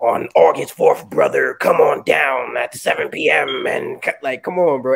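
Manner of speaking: loud, raspy wrestling promo hype-man voice. Showing how he usually does event promos, in the wrestling promo voice. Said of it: "Everybody do that voice".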